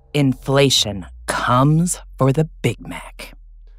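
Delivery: very slow, eerie, drawn-out spooky horror voice. Reading a headline aloud when asked to make it spooky: spooky horror voice. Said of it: "Make it spooky".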